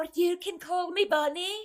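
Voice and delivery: put-on laid-on Scottish accent, very high and loud. Correcting the other speaker's quote of Mrs. Claus, heightened Scottish Mrs. Claus accent. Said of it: "heightened Scottish accent".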